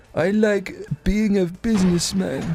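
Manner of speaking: playful impersonating voice. Doing impressions on request: Donald Trump impression.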